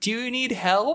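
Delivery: acted, very high yell carrying as if from afar. Retelling a woman calling from across the street, imitating a woman yelling. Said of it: "a woman yells from like across the street".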